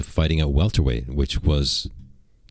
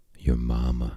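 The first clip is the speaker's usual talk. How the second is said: acted put-on whisper, lower and quieter; 5 semitones lower, 5 dB quieter than usual. Acting out a comeback leaned in close: acting out a whisper. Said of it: "I'm gonna whisper".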